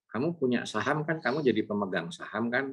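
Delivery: normal talking voice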